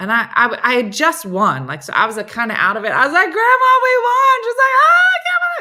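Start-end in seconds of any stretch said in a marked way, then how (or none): 4.8-5.6 mock very high, weepy, joyful crying voice. Retelling Grandma's reply to the news of the win, imitating happy crying. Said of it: "She's crying, but good cry".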